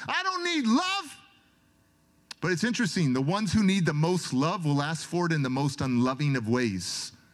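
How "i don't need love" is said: screaming, pitched way up high. Retelling pushing away a group hug, imitating his own screaming. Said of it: "And I'm screaming".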